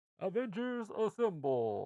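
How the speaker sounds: high, slow video game announcer call.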